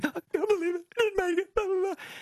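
high-pitched fake crying. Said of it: "fake crying".

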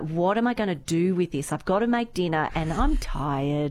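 ordinary talk, nothing marked

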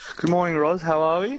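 high, cheerful, smiling voice.

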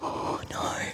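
soft, despairing, dismayed whisper.

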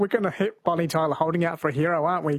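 ordinary talk, nothing marked

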